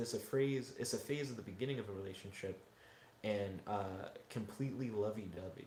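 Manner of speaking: ordinary talk, nothing marked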